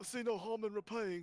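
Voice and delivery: sarcastic mocking put-on voice. Mocking a man who offered to repay the horses he killed: mocking imitation. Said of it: "I'm mocking him".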